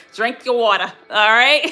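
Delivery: imitated East Coast accent. Giving hydration advice, repeating the tip once more: East Coast accent. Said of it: "I say that in my East Coast accent".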